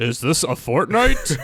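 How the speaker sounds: game character-select announcer voice. Wishing for a fortnite skin, the speaker mimics the character-select announcer: game announcer voice. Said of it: "the announcer voice".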